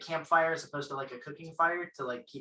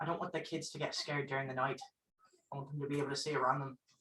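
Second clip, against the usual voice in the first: hushed, soft, secretive half-whisper; 8 dB quieter than usual. Speaking in character to another character so the kids don't hear: half-whispering. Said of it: "I'm gonna try and whisper this to Rustilian".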